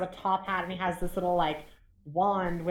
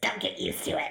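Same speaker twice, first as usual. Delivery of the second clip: growled line in a sock puppet voice; 2 semitones lower than usual. Narrator voicing a sock puppet that turns and looks at you, growling sock puppet voice. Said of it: "And he like growls at you".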